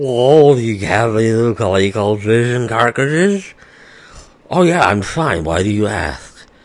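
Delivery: slow, high, drawn-out words, as if mouth numbed. Retelling how the speaker sounded asking questions in a store: sounding like the Elephant Man. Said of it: "I'm sure I sounded like the Elephant Man".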